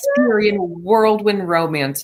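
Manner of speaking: very sarcastic, dripping with mockery, swooping sing-song. Reacting to a bathtub love scene from a show: very sarcastic. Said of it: "I'm being very sarcastic".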